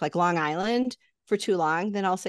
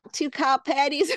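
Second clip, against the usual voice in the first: unconvincing, weak put-on Texan accent with raised pitch; 7 semitones higher than usual. Naming what's on a texan sandwich, in an unconvincing texan accent. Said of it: "if I say it in a Texan accent".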